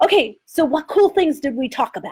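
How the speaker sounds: put-on English host accent. Describing a podcast host's promo routine with guests: Russell Brand accent. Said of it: "in his accent and everything".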